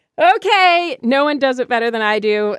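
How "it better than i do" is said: ordinary talk, nothing marked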